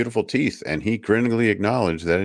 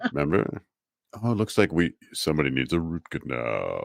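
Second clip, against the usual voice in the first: smooth, pleasant, easygoing villain voice with menace; 3 semitones lower, 4 dB quieter than usual. Retelling how he talked while working on your teeth, imitating a smooth, pleasant villain. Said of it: "all just pleasant".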